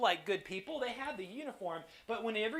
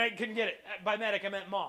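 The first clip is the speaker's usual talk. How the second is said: ordinary talk, nothing marked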